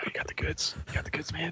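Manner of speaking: very quiet, hushed whisper, close in. Playing a character trying to pick up Arotig, whispering in Arotig's ear. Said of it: "I whisper in Arotig's ear".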